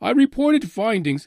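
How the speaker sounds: put-on English accent. Retelling what the UFO Sightings Daily blogger reported, giving him an English accent impression. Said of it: "I got to give him like that English accent".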